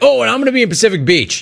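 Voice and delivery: high, fast, mocking put-on voice.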